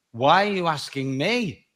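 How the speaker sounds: plain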